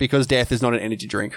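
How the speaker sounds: normal talking voice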